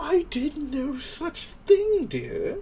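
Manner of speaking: very high, sarcastic, accented spirit voice.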